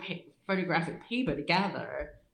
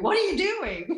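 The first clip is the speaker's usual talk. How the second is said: mock screaming, very high-pitched; 11 semitones higher, 4 dB louder than usual. Retelling how a lady came out screaming at the speaker, imitating her scream. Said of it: "she's screaming at me".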